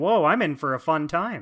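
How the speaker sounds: plain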